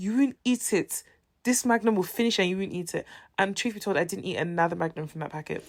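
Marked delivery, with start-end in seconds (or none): 0.0-3.1 put-on scolding voice, higher pitched. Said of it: "She said it in Igbo".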